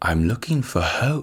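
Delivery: slow, soft, deliberate whisper. Imitating Patrick Stewart as Professor X in a whisper: Patrick Stewart whisper. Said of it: "he only talks in a whisper".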